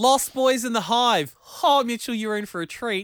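high, loud, sarcastic mock enthusiasm.

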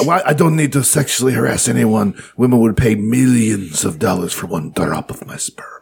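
put-on Spanish-accented delivery. Quoting the guy who started hot yoga, in a Spanish accent. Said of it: "I just said I gave him a Spanish accent".

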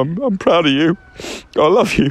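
plain

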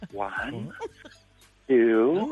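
put-on gentle, motherly tone. Recalling counting out coffee the way the speaker's mother did, imitating mother, gentle counting. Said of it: "I was saying it really gently and mother-like".

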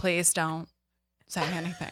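hushed, breath-only half-whisper. Retelling a childhood moment, pleading quietly to a sister: retelling a half-whisper. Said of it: "And I whisper to her".

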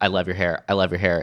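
plain

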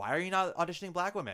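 called out very loudly, high pitch. Speaker retelling what Laurie Davis said during auditions, saying it very loudly. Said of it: "she says very loudly".

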